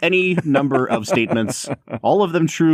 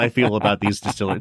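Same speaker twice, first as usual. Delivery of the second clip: normal talking voice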